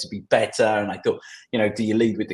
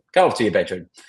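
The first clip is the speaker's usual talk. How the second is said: mock mean, harsh scolding. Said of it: "super mean".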